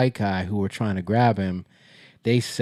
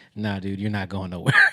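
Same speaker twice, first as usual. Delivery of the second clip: mock cool, very calm, unbothered nonchalant delivery; 4 dB quieter than usual. Retelling blocking a man from closing the door, retelling saying it calmly. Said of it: "Like I just said it very calm".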